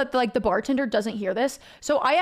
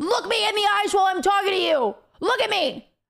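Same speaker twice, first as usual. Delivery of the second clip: furious, angry yelling; 7 semitones higher than usual. Telling a story about a woman in a bar, retelling her yelling at a man. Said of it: "she is yelling at this dude".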